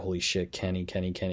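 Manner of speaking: usual speaking voice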